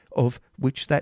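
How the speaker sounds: ordinary delivery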